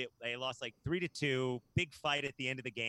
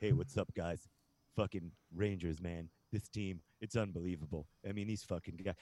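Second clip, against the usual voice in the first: very low, deep promo-style voice; 6 semitones lower than usual. Retell Bobby Nystrom talking to you like a fan, in a Bobby Nystrom voice, low-down Ric Flair style. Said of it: "that's like the Bobby Nystrom voice".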